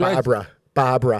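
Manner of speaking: put-on New York Long Island accent. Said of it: "I learned to talk like that from".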